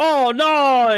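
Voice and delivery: mock dramatic panic. Retelling a staged scene with mockery: imitating fake dramatic panic. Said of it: "it's such performative, fake bullshit".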